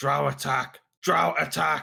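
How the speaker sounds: loud, raw, rough shout. Character spotting drow, yelling to people and guards behind, yelling a warning. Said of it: "I just yell out".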